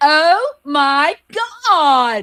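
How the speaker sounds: put-on very loud, swooping Valley Girl accent. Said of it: "in her totally Valley Girl accent".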